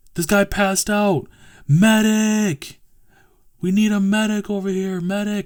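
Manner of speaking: mock high yell, movie-style, word medic drawn out. Retelling how some dude yelled for a medic after a guy passed out, retelling a yell. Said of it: "some dude yells".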